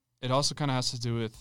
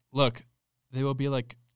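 normal talking voice

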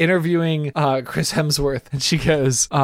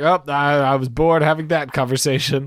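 ordinary delivery

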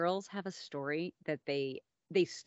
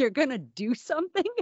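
high, acted, teasing mockery through laughter; 6 semitones higher, 7 dB louder than usual. Speaker retells the girls' reply to her threat; imitating girls laughing hard. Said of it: "they just started laughing so hard".

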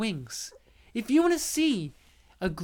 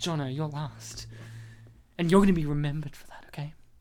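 very low, tender, touching, heartfelt sincerity; 7 semitones lower than usual. Redoing a line to Jono that sounded like a threat, say it more touching. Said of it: "I'll say it more touching".

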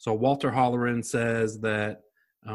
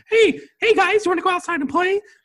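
put-on very high, very loud, unbroken boy voice; 8 dB louder than usual. Imitating how a fourteen-year-old boy would normally talk: imitating Roland as a young boy. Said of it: "think of a fourteen-year-old boy, his balls might not have dropped yet".

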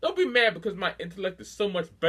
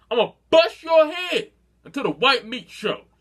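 loud, raised voice, pushed out harder; 6 semitones higher, 7 dB louder than usual. Repeating the threat for someone who seems hard of hearing; louder. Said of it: "Let me say that a little louder".

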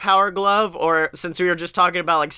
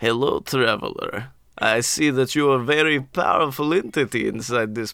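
put-on Eastern European accent, much lower; 5 semitones lower than usual. Describing a green gooblin greeting a traveler, in an Eastern European accent. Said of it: "It's very Eastern European you're going there".

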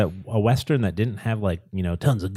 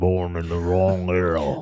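deep, country-sounding put-on voice; 3 semitones lower than usual. Joking about a cowboy actor, imitating him: Sam Elliott voice, deep and country. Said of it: "I don't even know if I'm doing this voice right".

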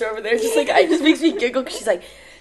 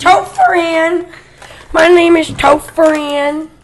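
put-on very loud, very slow, high, aggressive kid voice; 5 semitones higher, 8 dB louder than usual. Quoting a TikTok sound of a little kid: Topher impression. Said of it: "Isn't that the sound on TikTok?".

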